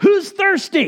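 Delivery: acted-out shout. Retelling how Jesus stands up at the feast: imitating Jesus yelling out. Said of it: "Jesus stands up and yells out".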